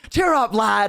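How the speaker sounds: cheerful dwarf voice. Retelling a role-play scene, voicing the dwarf cheering someone up. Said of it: "the dwarf would be like".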